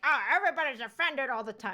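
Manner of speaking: mocking put-on caricature voice. Mocking a common complaint: bigot impression. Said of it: "my bigot impression".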